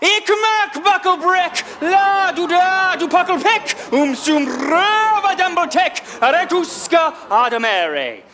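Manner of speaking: put-on very high, very slow, drawn-out shouted gibberish. Standing on a bucket at a puppet show, shouting to stun them into staying: retelling a shouted gibberish line. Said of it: "shout out the whole thing".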